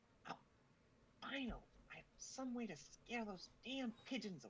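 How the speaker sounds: very high-pitched, private whisper. Voicing a character spotting a useful battery: whispering to himself. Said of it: "whispers to himself".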